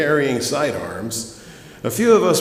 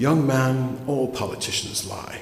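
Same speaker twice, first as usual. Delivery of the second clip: her best put-on British accent; 4 dB quieter than usual. Retelling what a little lady congregant said to a towering man, british accent. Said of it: "she said in her best British accent".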